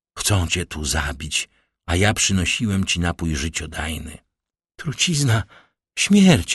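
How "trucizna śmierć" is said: high, sudden cry on two words. Walentyna, thinking a fever nightmare has come again, exclaims. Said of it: "Wykrzyknęła Walentyna".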